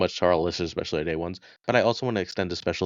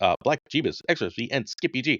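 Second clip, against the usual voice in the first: rapid-fire fast reading, slightly higher pitch; 6 semitones higher than usual. Thanking a long list of supporters by name, asked to go fast: reading names very fast. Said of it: "Let's see how fast you can do it".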